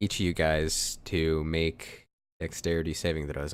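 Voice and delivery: normal talking voice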